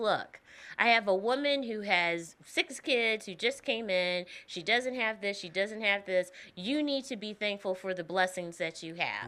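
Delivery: ordinary talk, nothing marked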